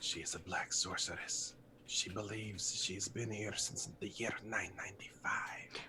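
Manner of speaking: hushed, very quiet, barely audible whisper. Warning another character in a scene so only he hears: said very quietly. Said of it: "so I just say very quietly".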